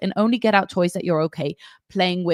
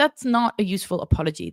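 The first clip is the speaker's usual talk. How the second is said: ordinary delivery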